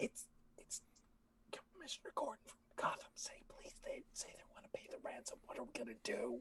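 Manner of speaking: very quiet, hushed, theatrical stage whisper. In an improvised scene, rushing to a partner with news of a call, in a stage whisper. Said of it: "I'm like whispering, kind of stage whisper".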